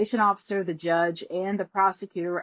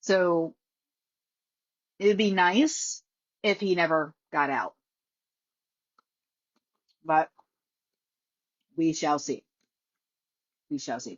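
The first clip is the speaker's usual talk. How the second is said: talking while eating, between bites. A speaker who hasn't eaten much today, talking while eating. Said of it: "I'm sorry, I'm eating".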